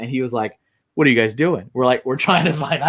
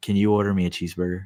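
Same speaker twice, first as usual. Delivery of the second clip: put-on innocent whisper, lower pitch; 5 semitones lower, 4 dB quieter than usual. Retelling a drive-thru order, a passenger's request: imitating Joey's innocent whisper. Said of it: "whispered it so innocently to me".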